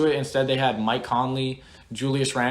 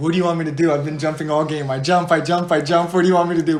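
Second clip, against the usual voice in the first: put-on strong, loud Greek accent; 3 semitones higher, 6 dB louder than usual. Retelling how a player answered people getting on him during a game: Giannis Greek accent impression. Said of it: "But like in his Greek accent".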